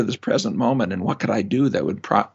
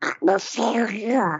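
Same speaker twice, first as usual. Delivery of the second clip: put-on cartoon duck voice; 10 semitones higher than usual. Saying a habitual thought aloud as asked: Donald Duck voice. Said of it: "say it in Donald Duck's voice".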